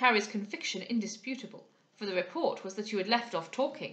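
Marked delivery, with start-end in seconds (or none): none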